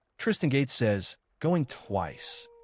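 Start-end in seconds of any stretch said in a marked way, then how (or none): none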